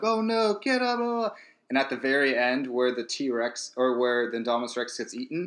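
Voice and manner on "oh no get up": very high, very slow, drawn-out scream. Retelling how people screamed during the T-Rex fight; imitating people screaming. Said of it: "people were like screaming like".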